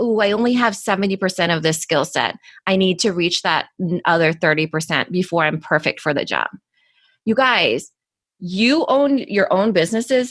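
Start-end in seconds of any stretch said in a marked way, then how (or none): none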